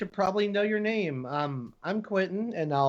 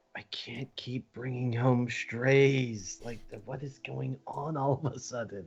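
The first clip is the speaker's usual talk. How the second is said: quiet, low grumble under the breath; 3 semitones lower, 3 dB quieter than usual. Voicing Quentin, who turns away and mutters to himself: muttering under his breath. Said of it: "just under his breath".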